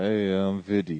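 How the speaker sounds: plain speech with the jaw grinding slightly. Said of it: "with my mouth grinding a little bit".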